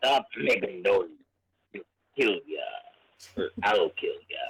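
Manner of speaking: put-on pirate voice, pitched low. Voicing a game character's lines in english: pirate voice. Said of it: "He sounds like a pirate".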